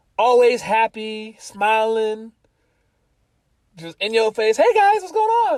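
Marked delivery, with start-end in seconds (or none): 4.6-5.6 very high, loud, bubbly, squeaky voice. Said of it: "High-pitched voice".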